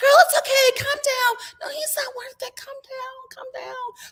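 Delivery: put-on anxious, soothing, nervous pleading, very high. Retelling talking to the TV, urging her to calm down: retelling own nervous pleading to TV. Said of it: "I'm talking to the T V".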